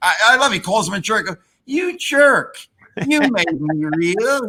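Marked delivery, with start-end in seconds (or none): 1.7-4.5 put-on ventriloquist dummy voice. Quoting a Twilight Zone episode's talking dummy, imitating the ventriloquist dummy's voice. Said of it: "You got the same voice".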